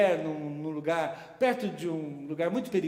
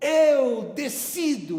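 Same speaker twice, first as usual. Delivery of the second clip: loud, high, barked shout; 8 semitones higher, 7 dB louder than usual. Retelling how a gunman shouted threats: imitating a man shouting. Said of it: "E ele gritou".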